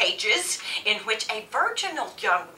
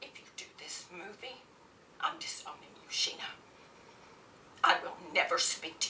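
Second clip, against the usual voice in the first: whispered, hushed, biting and scornful; 3 semitones lower, 17 dB quieter than usual. A woman threatens to disown Sheena if she does the movie, in an indignant, scornful ultimatum. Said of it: "You and the rest of your generation are all too busy getting boob jobs and counting carbs to notice that women are still royally screwed. They pat you on the head, they tell you discrimination is over. Who needs equal".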